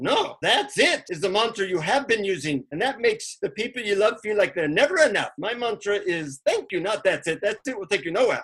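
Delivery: put-on Indian accent. Retelling a teacher's reply about the mantra: Indian accent. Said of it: "in an Indian accent".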